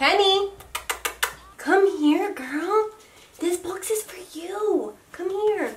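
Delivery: very high, sweet little dog voice. Calling the dog penny over to a box, in a little voice for the dog. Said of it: "that's just my little voice for my dog".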